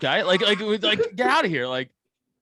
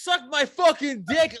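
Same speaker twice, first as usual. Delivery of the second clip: mock-yelled shout; 6 semitones higher than usual. Telling how he lost control of the room, retelling Kyle's yell. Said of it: "He yells it out".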